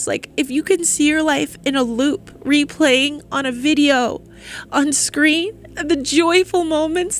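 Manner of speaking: high, emotional voice welling up.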